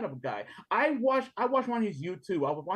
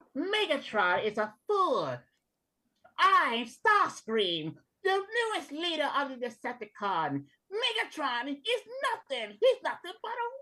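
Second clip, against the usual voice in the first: put-on high, widely swooping cartoon character voice; 7 semitones higher than usual. Asked to do Starscream, speaker performs in a Starscream voice. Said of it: "Can you do uh, Starscream?".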